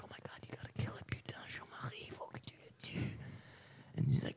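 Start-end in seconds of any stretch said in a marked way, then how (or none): 0.0-3.1 fast, soft, panicked whisper.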